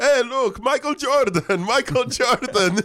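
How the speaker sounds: put-on Greek accent, very high. Retelling what a foreign visitor said on seeing the speaker: imitating a Greek immigrant accent. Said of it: "That sounds like a Greek immigrant".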